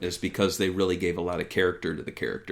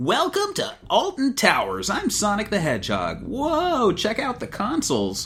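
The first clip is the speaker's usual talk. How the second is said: voice pitched way up high. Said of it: "Sonic would be like".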